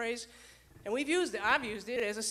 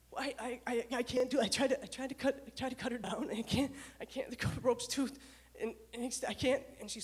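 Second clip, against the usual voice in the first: mock stuttering and sputtering. Retelling what a woman said to the speaker, imitating her stuttering, sputtering. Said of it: "she's stuttering. And she's sputtering".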